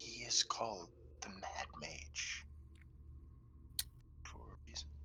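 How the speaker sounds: quiet whispered aside. Whispering in character to the person next to them: whispering. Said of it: "whispering to the person next to me".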